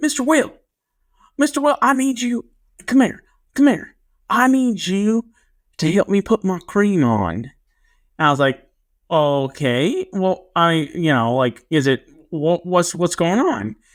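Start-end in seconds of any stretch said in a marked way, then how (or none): 0.0-7.3 put-on thick small-town Arkansas accent, much higher. Retelling a small-town kid asking him for help: big Arkansas accent. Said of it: "he had a really big accent".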